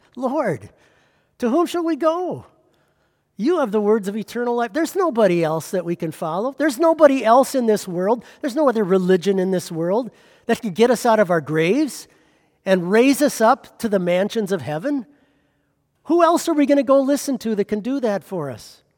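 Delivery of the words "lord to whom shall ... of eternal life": high, rushed pleading inflection. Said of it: "the inflection in his voice when he said that".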